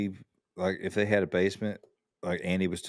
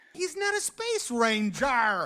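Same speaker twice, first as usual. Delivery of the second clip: put-on angry cartoon cowboy voice, pitched higher. Quoting a favourite movie line, imitating Tom Hanks' mad delivery. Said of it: "the delivery of, um, of Tom Hanks when he goes".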